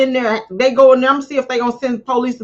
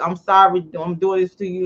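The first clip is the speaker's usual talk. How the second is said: put-on tearful, fake crying voice, lower pitch; 6 semitones lower, 4 dB quieter than usual. Imitating people who lie while looking at him: imitating someone fake crying. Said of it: "They gonna use them tears like".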